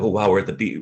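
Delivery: plain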